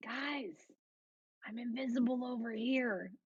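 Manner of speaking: whispering. Speaking in character to the party while invisible: whispering. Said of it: "I'm gonna kinda whisper and be like".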